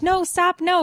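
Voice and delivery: frantic, high-pitched screaming. Retelling being pulled fast on ice skates: retelling own screaming. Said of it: "as I'm screaming".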